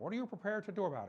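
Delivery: put-on quick, rattled-off speech in Scottish accent. Quoting Sean Connery's film question to Elliot Ness, speak in Sean Connery's Scottish accent. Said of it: "in the Scottish accent".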